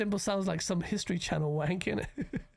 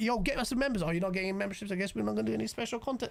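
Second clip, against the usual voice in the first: put-on patronising, condescending guilt-tripping tone. Imitating a streamer who guilt-trips viewers for memberships: imitating someone guilt-tripping viewers. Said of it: "This guy just will guilt trip you to, like".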